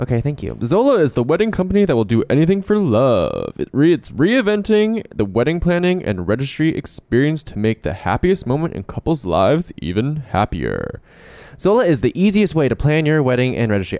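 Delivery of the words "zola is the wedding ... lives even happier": put-on radio announcer voice, ad-read style. Doing all the ads as promised, reading one: radio hetero voice. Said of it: "my radio hetero voice".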